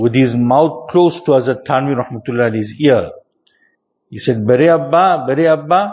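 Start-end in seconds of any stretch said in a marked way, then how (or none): 4.5-5.9 insistent, high, repeated calling out. A storyteller retells a man calling close to another man's ear, calling out very loudly. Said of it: "very loudly".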